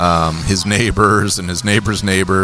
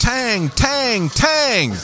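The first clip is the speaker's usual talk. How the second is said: put-on very high-pitched yell. Retelling the sushi chef calling out as Thomas walks in, retelling a yell. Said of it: "He just yells out".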